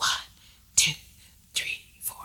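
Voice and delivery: soft, hushed, breathy whisper. Leading a counting exercise, show listeners the tone to use: whispering the counts. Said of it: "have a whispering tone like this".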